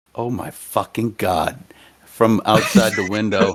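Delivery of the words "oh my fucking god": whispery exclamation, quieter and lower. Game narrator voicing someone heard from outside the window, in a whispery voice. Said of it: "You hear a whispery".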